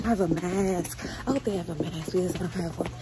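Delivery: low, hushed half-whisper under the breath. Speaker talking to a friend, half-whispering. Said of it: "I don't even know why I'm whispering".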